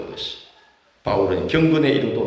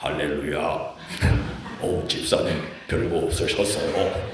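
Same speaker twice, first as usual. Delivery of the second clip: very low, holy-sounding, pious preacher voice; 7 semitones lower, 4 dB quieter than usual. Demonstrating how some pastors talk to hold a church, in a holy-sounding preacher voice. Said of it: "거룩해 보이는 음성으로".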